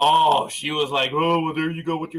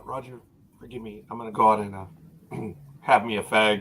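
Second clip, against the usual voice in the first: imitated whisper, lower; 4 semitones lower than usual. Retelling how a coworker walks by and speaks to him, imitating a whisper. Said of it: "He'll walk by and he'll whisper".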